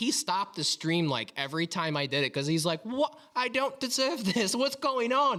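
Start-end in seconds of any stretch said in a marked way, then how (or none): 2.8-5.4 put-on poor, high-pitched Australian accent. Speaker retells a streamer's reaction to a donation, bad Australian accent. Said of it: "not a very good Australian accent".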